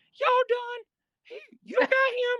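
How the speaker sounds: put-on soft-spoken voice. Retelling how a fellow inmate broke up the fight, imitating Whisper's voice. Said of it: "He talked like this".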